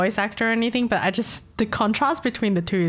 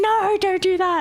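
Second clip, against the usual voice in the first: high, stretched, drawn-out scream; 10 semitones higher, 3 dB louder than usual. Describing what you'd hear in the scene, imitating someone screaming. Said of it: "you hear someone screaming".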